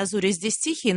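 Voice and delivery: normal talking voice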